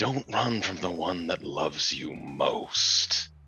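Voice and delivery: whispered voice. Looking at her and speaking into a cloud, whispering. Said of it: "as you're whispering this into this cloud".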